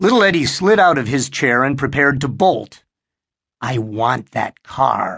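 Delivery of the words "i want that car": whispered, much slower. A child speaking to another child, whispered. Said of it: "Harry whispered".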